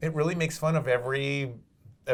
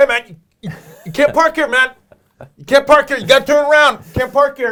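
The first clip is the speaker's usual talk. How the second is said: shouted, loud, high-pitched cop voice; 12 semitones higher, 15 dB louder than usual. Retelling telling drivers in a studio lot they can't park: imitating his own cop act. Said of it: "I'd be like".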